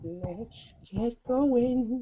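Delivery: very high-pitched comic voice. Kicking off the podcast recording in an Adam Sandler voice. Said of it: "That's my Adam Sandler voice".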